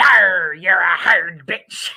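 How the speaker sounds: talking like a pirate. Mocking how a man delivers his line: pirate voice. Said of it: "he sounds like a literal pirate when he says it".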